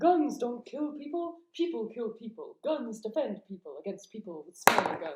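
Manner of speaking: animated cartoon-style character voice, swooping with wide pitch swings. Answering a request for a Stan Smith impression: Stan Smith impression. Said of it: "Can you do a Stan Smith impression?".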